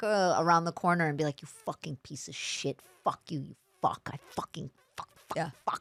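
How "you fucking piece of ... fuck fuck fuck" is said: put-on whispered string of furious, hateful curses. Retelling cursing at customers out of sight after waiting tables: imitating own past hateful cursing. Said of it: "I wanted to kill people".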